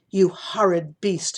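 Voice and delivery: growled in fury. Reading a story, voicing the princess as she turns on Sidney, growling. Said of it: "the princess growled at Sidney".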